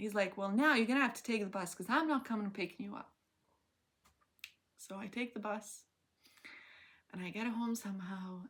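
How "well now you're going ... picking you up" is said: irritated, angry scolding voice. Speaker retelling what he said once he got angry, imitating him angry. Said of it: "he's like angry at this point".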